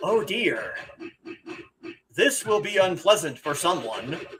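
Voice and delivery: dry, completely deadpan delivery. Fan quotes a favourite line from the game, imitating Sagacious Zu's deadpan. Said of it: "he says it deadpan like that in that voice".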